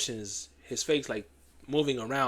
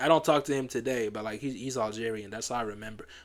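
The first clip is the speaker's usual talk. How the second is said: ordinary delivery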